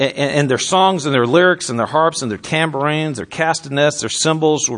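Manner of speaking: ordinary delivery, nothing marked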